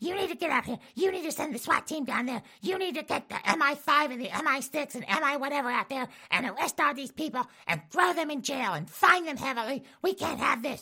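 very high, entitled complaining tone. Acting out a woman calling the police on people: COVID Karen impression. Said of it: "an impression of what COVID Karen sounds like".

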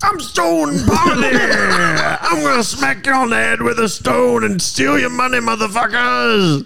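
very high, raspy wrestler bluster, drawn-out "I'm". Friends invent a wrestler name, then one plays him; Stone Poverty wrestler voice. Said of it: "sounds like a terrible, terrible wrestler".

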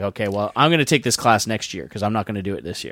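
furious, curt and fed-up. Retelling own reply to the teacher after failing: retelling own furious reply. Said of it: "I was furious".

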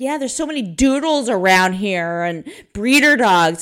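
mock, loud, pointed, passive-aggressive tone. Retelling a remark at the park about doodles: imitating own loud remark. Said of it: "I make it really loud".

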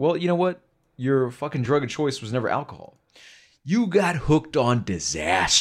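bad, earnest, emotional, dramatic film-star voice. Retelling a movie scene, in a terrible William Hurt impression. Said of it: "And that's a terrible impression".

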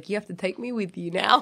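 smug, self-satisfied, gloating tone. Playing a character who smiles after winning the argument: smug.

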